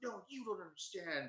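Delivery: put-on high, whiny, angsty tone. Retelling a show's scene, imitating a whiny character. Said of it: "it's very, like, angsty".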